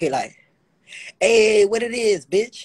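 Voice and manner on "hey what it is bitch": way too hyped-up, high, drawn-out overexcited voice. Retelling a phone call greeting: imitating someone too excited. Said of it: "you too excited".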